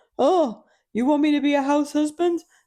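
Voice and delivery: mock outrage, pitched way up, loud, offended.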